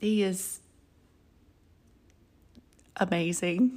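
soft, choked-up voice, near tears. Speaker praising their partner of many years, choking up. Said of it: "I can't believe I'm going to cry".

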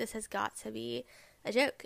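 normal talking voice

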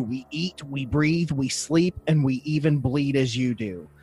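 ordinary delivery

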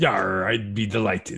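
put-on pirate speech. Asked to sit with Kate, a man answers: talking like a pirate. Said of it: "why is he talking like a".

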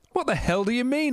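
very high pitch, sudden exploding outburst. Narrator reads his own reply to a questioner, exploding. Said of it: "I exploded".

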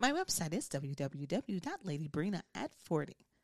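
put-on professional, business-like voice. A guest gives out their website at the end of the show: put-on professional voice. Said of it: "let me say my professional voice".

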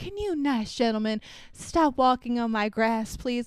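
genteel, polite, courteous, well-mannered tone. Retelling how Stanley asks men to stop walking on his grass: imitating Stanley's polite request. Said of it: "he politely said".

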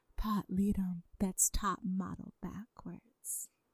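whispering. Answering a request to whisper the name: whispered. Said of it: "can we all do our best whispered Pot Leadums?".

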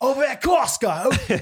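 put-on Australian accent. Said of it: "fun word to say in Australian accent".

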